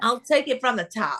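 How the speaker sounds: fake, laid-on American accent. Showing off an accent with a simple line, in a put-on American accent. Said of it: "That's my American accent".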